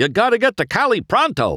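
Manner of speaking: very high, urgent hollering. In the story, Harv yells at McQueen, who answers him: yelling. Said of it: "Harv yelled".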